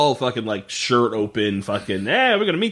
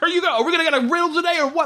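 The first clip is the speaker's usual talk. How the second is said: very high, mad, angry shouting, acted out. Retelling how a character yelled at the riddle lady: imitating someone yelling angrily. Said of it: "so mad".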